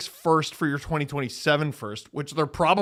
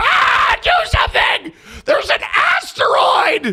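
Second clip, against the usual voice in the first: put-on frantic movie scientist voice, higher and louder; 9 dB louder than usual. Comparing themselves to a movie scientist, yelling into the camera: Leonardo DiCaprio impression. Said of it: "I'm Leo DiCaprio going".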